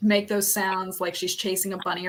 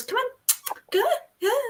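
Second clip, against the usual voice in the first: very high, unclear words blurred together; 3 dB quieter than usual. Retelling how Spencer calls the dog: imitating Spencer's unclear speech. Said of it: "can't really, um, enunciate, so he goes".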